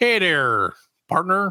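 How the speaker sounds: rough attempt at a Michigan accent. Wondering which voice to do, try out a line for Fred in an attempted Michigan accent. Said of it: "can you do a Michigan accent".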